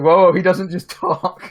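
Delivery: sudden, abrupt, cutting-in exclamation. Retelling own words cutting off another player: imitating own abrupt interruption. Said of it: "I was just cutting that off".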